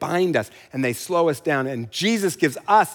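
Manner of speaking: ordinary delivery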